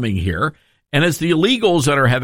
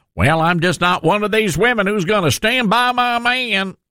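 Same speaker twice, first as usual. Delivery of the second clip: put-on Arkansas accent, pitched up, for show; 5 semitones higher than usual. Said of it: "she put on the fake Arkansas accent".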